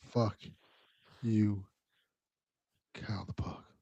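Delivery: barely audible, very quiet, slow, low sensual drawl. Imitating Delvin saying the line really slowly: imitating a slow, low, sensual line. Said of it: "That was getting low and sensual".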